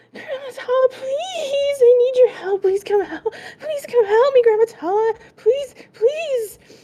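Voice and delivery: crying, begging through sobs, very high and loud. A game narrator voices a character calling out to Grandma Tala: crying plea for help. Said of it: "the crying is just".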